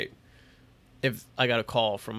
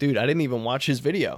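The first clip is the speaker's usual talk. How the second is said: normal talking voice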